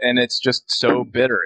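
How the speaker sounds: usual speaking voice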